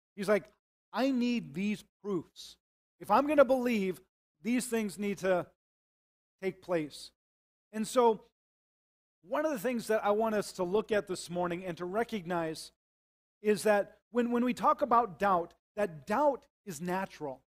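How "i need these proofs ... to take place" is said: slow, indignant, demanding tone. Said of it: "he was very indignant".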